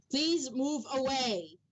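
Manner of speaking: echoing, statue-like voice. Narrating a scene, voicing a statue that restrains a dwarf: booming echoing statue voice. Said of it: "a booming voice does echo".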